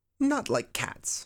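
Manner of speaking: piercing, shrill, high-pitched, impassioned cry. Narrator reading Alice in Wonderland, the mouse answers Alice: shrill, passionate voice. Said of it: "in a shrill, passionate voice".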